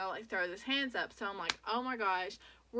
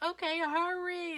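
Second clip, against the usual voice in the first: high, urgent, shouted voice; 9 semitones higher than usual. Retelling a frightened phone call to her mom: imitating her own screaming. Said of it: "I'm screaming".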